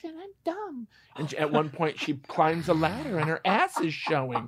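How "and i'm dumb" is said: put-on very high, hushed, very soft ditzy girl voice. Mocking a stereotyped hot-girl character from a bad movie, imitating her voice. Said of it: "there's one hot girl that talks like this".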